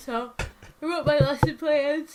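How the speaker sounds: high voice, words stretched by a yawn. Speaker recounting a day home from work, yawning while talking. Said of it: "I'm yawning while I'm talking".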